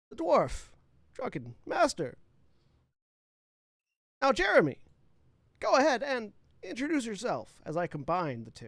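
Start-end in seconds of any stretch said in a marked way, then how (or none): 0.2-2.2 put-on halting, hesitant actor voice. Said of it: "You have Christopher Walken's voice, but Will Shatner's, uh, speech".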